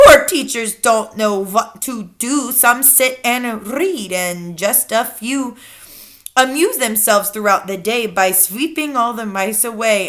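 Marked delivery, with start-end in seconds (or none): none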